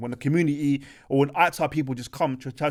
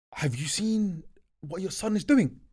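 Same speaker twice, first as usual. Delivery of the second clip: mock urgent, frantic, high-pitched voice; 5 semitones higher than usual. A son retells his father quoting a caller on the phone: imitating a frantic caller. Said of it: "like in a kind of frantic tone".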